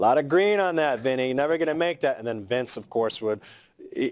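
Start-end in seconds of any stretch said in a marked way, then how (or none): 0.0-2.2 put-on big, heavy New York accent, pitched up. Act out a man talking to Vince on his turn at pool, in a big, thick New York accent. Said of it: "a big, thick New York accent".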